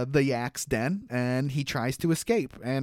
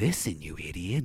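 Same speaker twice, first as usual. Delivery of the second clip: soft, hushed half-whispered aside; 8 semitones lower, 5 dB quieter than usual. Quoting a cartoon character who half-whispers to the viewers: imitating a half-whisper. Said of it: "I love how he whispers that".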